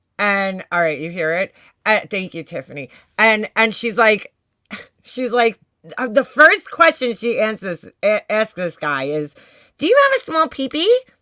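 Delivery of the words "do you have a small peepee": put-on rushed, very high-pitched baby talk. Retelling the first question she asks this guy, in a put-on baby voice. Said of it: "In like the baby voice".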